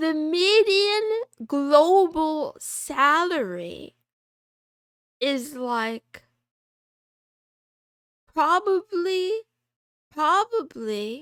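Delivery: cracking voice. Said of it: "why is my voice cracking?".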